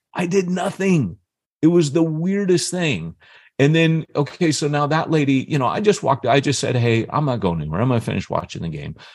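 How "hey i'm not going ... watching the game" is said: acted matter-of-fact, even-tempered, calm, quick delivery. Telling a story, acting out words said to a woman at a game, retelling a calm reply. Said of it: "and I'm talking like that".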